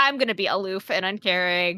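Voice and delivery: ordinary talk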